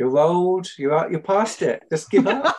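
loud, high, jeering heckling shout. Retelling a friend shouting at the TV during a match: imitating someone shouting at the TV. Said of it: "Luke sort of shouting at the T V".

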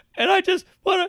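mock very high breaking-down voice, losing it. Retelling a man starting to speak about his daughter: imitating a man breaking down. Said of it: "now he breaks down".

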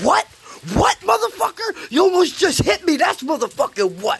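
very high-pitched, swooping yell. Retelling confronting a driver who nearly hit him: retelling a yell. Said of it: "while I'm yelling at him".

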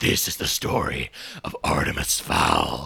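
mock gravelly narrator voice.

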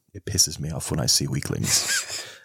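cool, unbothered, low, calm edgelord delivery. Acting out a smiling character from a series, looking down: mock-calm retelling. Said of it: "he says it in such a calm voice".

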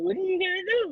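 very high, squeaky, bad monster impression.

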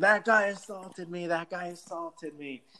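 yelped scream, pitched high. Retelling how a man reacted in a confrontation: retelling a scream. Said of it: "And he starts screaming".

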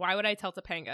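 ordinary delivery

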